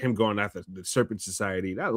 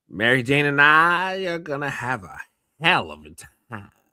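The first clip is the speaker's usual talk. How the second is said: slow, menacing, drawn-out Southern drawl; 4 semitones higher, 4 dB louder than usual. Acting out Matthew McConaughey as Norman Osborn threatening Spider-Man: Matthew McConaughey as Norman Osborn. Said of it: "him doing that Southern drawl".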